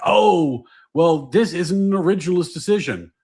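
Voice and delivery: acted-out irritated, mad, indignant voice. Retelling how annoyed critics complain about a ruling: imitating angry critics. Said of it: "the lefties who get mad about this are like".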